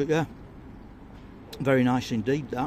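talking with mouth full. Reviewer tasting a steak pie, speaking with mouth full. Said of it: "Shouldn't speak with my mouth full".

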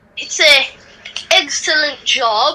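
jokey, put-on British accent. Replying to praise for excellent work: british voice. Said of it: "a British voice?".

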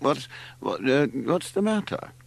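drowsy, just woken. Larry, just shaken awake by his mother, speaks sleepily. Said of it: "sitting up sleepily".

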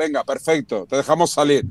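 ordinary talk

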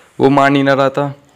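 normal talking voice

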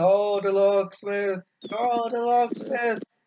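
loud, high-pitched, slow yelling by a group.

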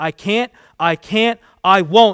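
very loud, slow, drawn-out scream. A man refuses as a woman insists that he must: screamed. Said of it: "he screamed".

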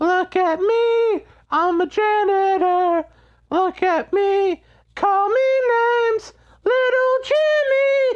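hard-to-sustain high-pitched character voice, climbing in pitch. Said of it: "I can't keep doing that high-pitched voice".

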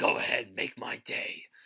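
put-on growling superhero voice. Listing a director's films and quoting a famous line, in a Batman voice. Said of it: "I sound like Batman right now".

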